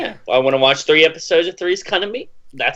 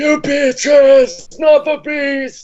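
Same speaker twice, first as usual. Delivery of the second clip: very high, loud, drawn-out delivery; 12 semitones higher, 6 dB louder than usual. Quoting a movie line to friends: Nicolas Cage impression. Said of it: "That was a pretty good Nicolas Cage".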